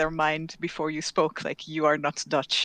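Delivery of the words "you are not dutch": usual speaking voice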